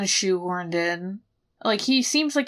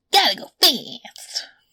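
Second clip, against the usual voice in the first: high, loud, belted cartoon hedgehog voice; 6 semitones higher, 5 dB louder than usual. Answering a listener question about Sonic's ghost haunting them, Sonic voice. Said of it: "just his voice would be haunting enough".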